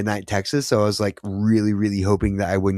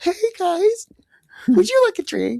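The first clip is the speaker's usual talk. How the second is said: very high, squeaky, swooping cartoon voice. Trading put-on voices in a group conversation; high cartoony voice. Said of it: "I'm not Mickey Mouse".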